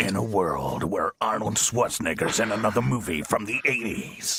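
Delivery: deep, epic movie-trailer announcer voice. A radio presenter, asked about movie voiceovers, doing a movie trailer voiceover.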